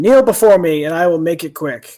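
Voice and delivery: loud, booming, roaring dragon shout. Voicing a dragon that shouts into the room: dragon shouting. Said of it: "shouts into the room".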